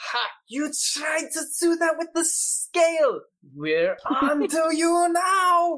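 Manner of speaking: put-on very high, slow, drawn-out German accent. Voicing one of them who calls out the trick: german accent. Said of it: "I think they're German".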